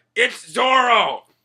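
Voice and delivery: irritated, high-pitched, loud, slow delivery.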